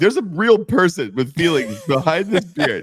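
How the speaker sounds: high, put-on fake sobbing. Retelling a moment on an airplane, mock crying to a stranger. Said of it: "I started fake crying".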